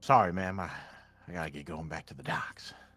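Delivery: dejected, sad, beaten-down, downtrodden man voice. Voicing a sad, broke man leaving the gambling tables: sad downtrodden man. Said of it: "a very sad and downtrodden man".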